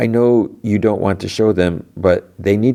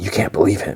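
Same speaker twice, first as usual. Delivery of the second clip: imitated whispering voice; 3 dB quieter than usual. Retelling a scene where one character warns another, imitating a whisper. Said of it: "Audrey whispers to Rick".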